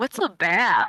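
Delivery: ugly, harsh-sounding stage whisper. Playing a character hidden in a trench coat, asking a question: half-whispering in character. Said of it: "whispered ugly".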